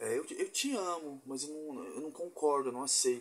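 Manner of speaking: put-on cutesy, syrupy, sugary sweet little voice. Speaker imitating people who preach prejudice, in a mock-sweet little voice. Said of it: "com essa vozinha doce, bonitinha".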